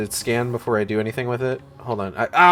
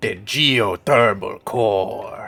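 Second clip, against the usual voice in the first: put-on cartoonish character voice, dropped deep and low; 4 semitones lower than usual. Reading out where to go next: Boss Nass voice. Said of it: "I was actually going for Boss Nass".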